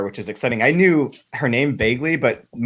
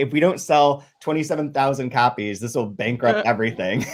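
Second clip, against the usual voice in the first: ordinary talk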